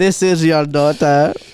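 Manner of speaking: put-on Indian accent. Imagining a call from an Indian call center guy: imitating an Indian call center guy. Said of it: "an Indian call center guy".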